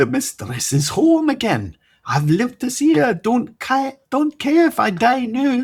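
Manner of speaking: put-on Scottish accent, very high and rising, brimming with joy. Reading Fiers greeting his mistress's return: joyful, in Scottish accent as Fiers.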